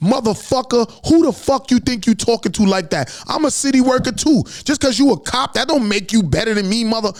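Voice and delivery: explosive, high, furious screaming, acted out. Retelling a roadside argument with a police officer: imitating own past screaming. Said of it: "I flipped on him".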